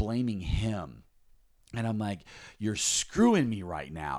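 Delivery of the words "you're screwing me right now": mock-furious, livid outburst. Speaker retelling blaming him in a moment of wrath, retelling a livid outburst. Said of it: "I was livid".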